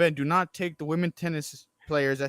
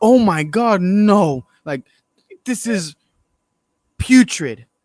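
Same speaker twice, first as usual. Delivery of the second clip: very loud, appalled, shocked gasping outcry; 4 semitones higher, 12 dB louder than usual. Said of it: "gasp. They're like".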